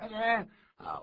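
high, loud, slow encouraging cheer.

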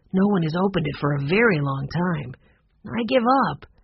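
ordinary delivery

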